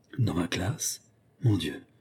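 low, hushed murmur under the breath. A stunned teacher reacts to news whispered to her, in a low voice. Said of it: "fit-elle à voix basse".

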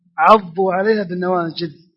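ordinary talk, nothing marked

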